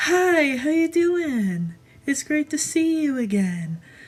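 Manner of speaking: put-on cheery salesperson voice, high, sing-song. Describing her voice when working at Hot Topic: put-on cheery salesperson voice. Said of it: "my salesperson voice is like".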